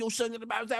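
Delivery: lightning-fast talking. Explaining how people talk fast on a train in a fast city: lightning-fast talking. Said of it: "you getting it all out lightning fast".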